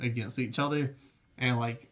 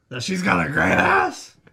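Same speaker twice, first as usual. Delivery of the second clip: very loud put-on star voice, blasted full force; 4 semitones higher, 9 dB louder than usual. Asking a question about an actress, Al Pacino impression. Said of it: "But in a Pacino voice".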